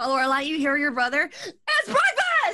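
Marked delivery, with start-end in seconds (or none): 1.3-2.6 shrill, very high shouted yell. Voicing a brother calling down to his sister: brother yelling. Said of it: "Lorelai's gonna yell at her brother".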